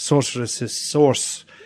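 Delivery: put-on, lilting Scottish-style wizard accent.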